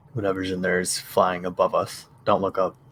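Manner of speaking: quick, rushed, hushed half-whisper. In the game, a character speaks to Freya, in a quiet half-whisper. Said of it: "I'm gonna just quietly whisper to Freya".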